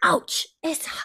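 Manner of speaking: fake Scottish child's accent. Recapping a show scene, quoting little Jemmy in a cute Scottish accent. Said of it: "he's so cute in his little Scottish accent".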